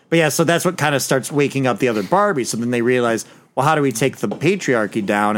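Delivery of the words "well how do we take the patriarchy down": normal talking voice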